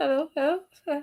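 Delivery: soft, flirty, intimate bedroom voice. Showing how some people greet as if speaking to their fiance: bedroom tone. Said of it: "Some of you will talk as if you're speaking to your your um fiance. ... Bedroom tone".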